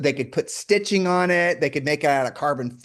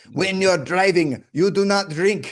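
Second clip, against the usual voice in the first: poor, put-on German accent. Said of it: "I can't do a German accent for shit".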